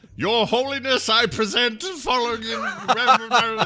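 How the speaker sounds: very high, loud, put-on British accent. Imagining how a British court would address someone, in a British voice. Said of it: "I just got you to do a British voice".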